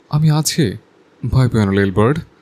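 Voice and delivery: very soft, tender, deep male voice. Narrator reads a man comforting a crying woman, in a soft, deep male voice. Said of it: "অত্যন্ত নরম ও গভীর পুরুষালী গলায় বলতে লাগলো".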